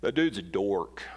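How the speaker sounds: deep, very low put-on teen boy drawl. A speaker illustrating cruel words people say, in a teenage boy voice. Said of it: "That's my teenage boy voice".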